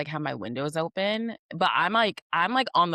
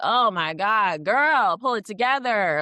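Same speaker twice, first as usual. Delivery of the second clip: mock dramatic, high, loud, stressed-out yell; 5 semitones higher, 5 dB louder than usual. Retelling stressful gameplay, yelling at the character: imitating own yelling. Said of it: "I be yelling".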